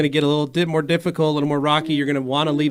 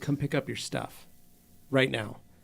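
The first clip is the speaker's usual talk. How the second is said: acted near-whisper through crying, hushed; 2 semitones lower, 11 dB quieter than usual. Retelling what his wife said to their son while crying, retelling tearful words. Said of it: "My wife started crying".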